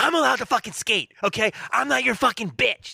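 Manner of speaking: mock hollering, loud. Reminding his opener how he hollered in the speaker's room: imitating someone hollering. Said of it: "You were in my room hollering at me".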